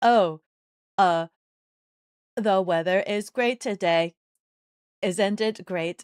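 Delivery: very loud, slow, insincere put-on delivery. Showing a made-up non-genuine reaction: fake non-genuine reaction. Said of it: "trying to think of a non-genuine reaction I could do".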